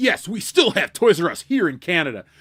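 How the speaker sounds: excited, proud martial-arts instructor voice. A host imagines how a commenter sounds, doing a Rex Kwon Do voice. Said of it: "please talk like this every sentence".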